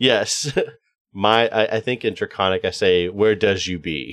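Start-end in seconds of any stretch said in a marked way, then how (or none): 3.1-4.1 deliberately broken English, faster. A player voices their character speaking Draconic: broken English. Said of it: "think of like broken English".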